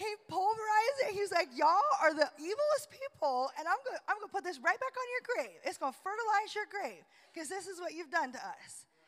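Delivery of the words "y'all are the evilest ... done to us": lightly cheeky, sass-tinged tone. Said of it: "he was kinda being a little sassy".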